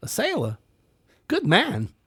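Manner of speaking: very high, sing-song, swooping delivery. Quoting a movie line as Christopher Walken: Christopher Walken impression. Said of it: "Christopher Walken goes".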